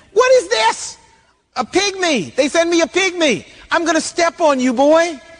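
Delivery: mock scornful jeering. Retelling the story of David meeting Goliath, acting out Goliath scoffing. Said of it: "Goliath scoffed at him".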